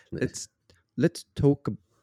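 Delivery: bad Minnesota accent drifting into English accent. Trying to say "let's talk about it" in a Minnesota accent: botched Minnesota accent turning English. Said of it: "You turned, like, English".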